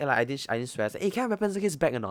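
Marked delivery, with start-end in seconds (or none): 1.0-2.1 fast, rattled-off, very high, furious shout. Recounting a school incident where he stood up and shouted, retelling an angry shout. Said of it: "then I shout".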